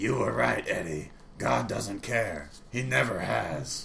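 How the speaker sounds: harsh, grating, rough, creaky put-on voice. Retelling a story where Eddie hears Satan speak during a bad storm, Satan voice. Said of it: "the Satan voice going".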